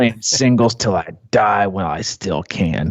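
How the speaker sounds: imitated raspy older man's voice. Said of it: "real raspy voice".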